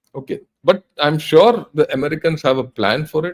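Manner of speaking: ordinary talk, nothing marked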